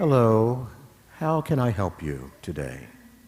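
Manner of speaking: slow, gentle, mild, earnest and sincere tone. Retelling a priest's favorite greeting: imitating a mild sincere tone. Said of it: "quite sincerely and in a mild tone".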